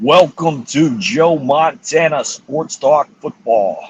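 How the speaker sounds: booming put-on video game announcer voice. Asked to repeat it, doing the Joe Montana Sports Talk Football voice. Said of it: "do the Joe Montana football voice one more time".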